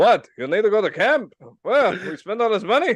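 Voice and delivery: voice pushed high and loud. Quoting a dad from a movie: Jackie Mason voice. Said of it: "like a bad Jackie Mason impersonation".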